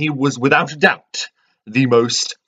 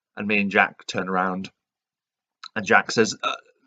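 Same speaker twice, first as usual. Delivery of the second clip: usual speaking voice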